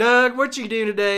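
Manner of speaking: put-on country accent, calling out. Speaker imitating a sister talking to them, in Teresa's country accent. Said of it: "My sister's got this accent. She's like".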